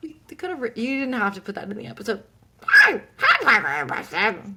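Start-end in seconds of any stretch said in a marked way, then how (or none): 2.6-4.6 put-on alien voice, much louder. Discussing an episode, the speaker repeats a woman greeting parker, imitating an alien voice. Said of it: "Mom does an amazing alien voice".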